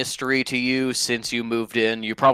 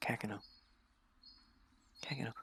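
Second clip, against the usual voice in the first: hushed, tender, very gentle near-whisper; 22 dB quieter than usual. Henry walks over and very gently says Kekino's name. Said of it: "very gently goes".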